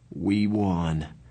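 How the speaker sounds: worn-out, tired, weary. After the Socs run, a bloodied fighter announces the result, in a tired voice. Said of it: "announced in a tired voice".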